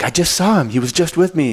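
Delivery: high, frantic scream with sobbing. Retelling what a frantic woman said, imitating someone screaming and crying. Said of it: "she's screaming and crying".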